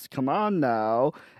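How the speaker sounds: put-on American guy accent. Describing how a father character talked: imitating an American accent. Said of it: "He talked like this".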